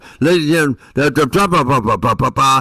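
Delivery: loud, high, blaring shouting. Showing how someone shouts into the microphone: imitating someone shouting into a microphone. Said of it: "starts shouting into it like this".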